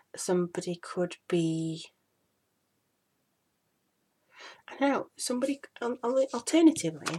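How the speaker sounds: halting, stumbling speech. Explaining the Lover's card while cramming in information, stuttering. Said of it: "sorry for stuttering".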